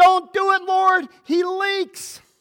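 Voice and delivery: put-on, shrill, high, loud screaming. Retelling a woman at prayer time who'd had enough: retelling a woman's scream. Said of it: "she screamed out".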